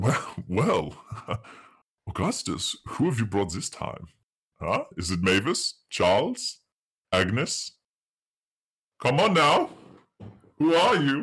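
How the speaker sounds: startled, taken aback. Voicing a man in a trench coat who is shocked to see strangers: startled. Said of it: "he is sort of startled and he says".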